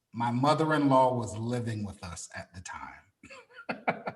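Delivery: forced straight-faced, drawn-out deadpan delivery. Saying a line while hiding the pain, joking: mock straight face. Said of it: "I'll do it with a straight face".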